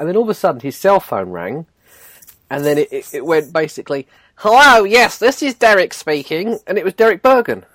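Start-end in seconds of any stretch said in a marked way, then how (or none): 4.4-6.6 weird, high, camp, drawn-out telephone voice. Retelling a man answering his phone: imitating Derek Bergen's camp voice. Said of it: "he has got a weird voice".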